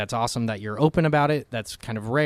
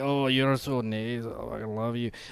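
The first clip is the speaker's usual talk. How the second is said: put-on drunk Scottish voice, quieter; 5 dB quieter than usual. Showing how an over-the-top scottish accent sounds when drunk: drunk scottish accent. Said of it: "a Scottish accent".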